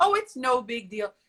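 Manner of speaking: normal talking voice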